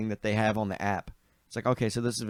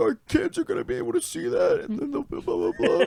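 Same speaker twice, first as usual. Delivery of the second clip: tearful, very high-pitched, pleading crying voice; 4 dB louder than usual. Retelling a dream, pleading at a girlfriend's knees: imitating own crying plea. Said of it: "at her knees crying".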